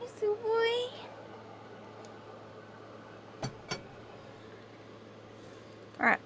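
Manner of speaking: talking while eating. Greeting another player while eating a snack: eating while talking. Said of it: "I'm eating a granola bar".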